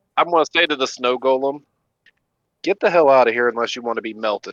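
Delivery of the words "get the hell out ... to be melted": menacing, intimidating tone. Player's character warning a snow golem to leave, in an intimidating voice. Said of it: "I'm doing that in an intimidating voice".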